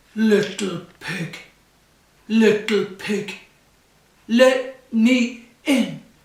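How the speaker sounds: huge, very loud, deep wolf voice. Reading the story aloud, the wolf knocks at the little pig's door: big deep voice. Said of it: "he said in a big, deep voice".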